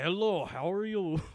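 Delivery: slow, thick put-on Russian accent. Retelling how a woman with a thick Russian accent greeted them: attempted Russian accent. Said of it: "I'm trying to see if I can do a Russian voice".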